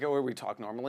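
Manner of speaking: normal talking voice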